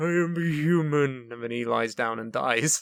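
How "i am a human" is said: very slow, dragged-out, drawn-out delivery. Retelling the Elephant Man movie, imitating the Elephant Man. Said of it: "He's like".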